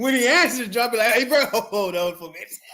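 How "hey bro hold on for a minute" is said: mock laughing while talking, put-on. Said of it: "I probably couldn't even get the words out".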